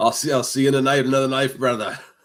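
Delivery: put-on Scottish accent. Asked for your best impression, deliver the line as a Desmond impression, Scottish accent. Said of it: "hear your best uh, Scottish accent Desmond impression".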